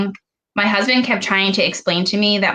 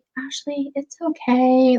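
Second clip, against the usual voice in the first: nice, gentle, soft-spoken voice, raised pitch; 6 semitones higher than usual. Quoting her gynecologist comforting her while she cried, imitating a soft-spoken, gentle voice. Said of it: "like soft spoken".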